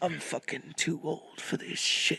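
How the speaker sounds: put-on whispered, hushed, grizzled old cop voice. Recalling telling a story about a retired detective: grizzled cop voice. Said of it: "I was doing the grizzled cop voice".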